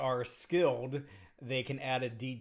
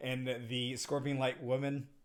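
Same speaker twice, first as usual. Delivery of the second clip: ordinary talk, nothing marked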